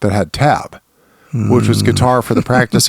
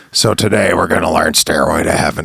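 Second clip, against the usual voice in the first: put-on, imitated smoky voice; 5 semitones lower than usual. Speaker recalls a guitar teacher announcing the day's lesson: imitating a smoky voice. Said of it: "And her voice was all smoky".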